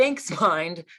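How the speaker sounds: sarcastic tone of voice. Retelling what one says back to one's own thoughts: imitating a sarcastic thank-you. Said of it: "kind of sarcastically".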